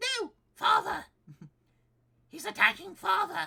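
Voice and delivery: put-on very high, very loud, swooping silly baby wail. Reading a story aloud, the narrator voices Miles's line in a Miles baby voice. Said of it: "Miles' baby voice is so so silly".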